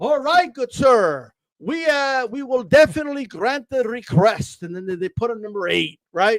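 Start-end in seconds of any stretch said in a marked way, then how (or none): 0.0-4.6 fake, overdone politeness in an official-sounding voice. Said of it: "with their fake ass fucking bullshit".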